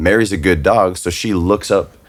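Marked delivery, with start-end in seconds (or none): none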